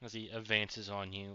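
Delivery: ordinary delivery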